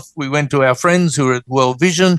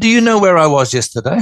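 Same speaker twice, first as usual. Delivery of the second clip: plain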